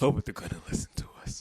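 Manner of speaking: put-on sinister, creepy delivery. Joking about pressing the button so everybody hears: put-on creepy voice. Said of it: "when you talk like that".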